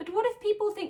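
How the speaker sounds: annoying little nagging voice.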